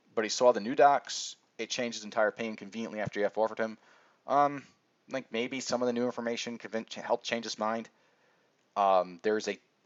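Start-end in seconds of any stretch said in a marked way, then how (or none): none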